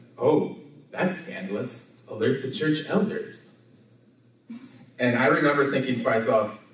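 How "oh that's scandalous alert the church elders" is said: dry, tongue-in-cheek sarcastic remark. Retelling a line from an episode of Friends: sarcastic Phoebe imitation. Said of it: "Phoebe sarcastically said".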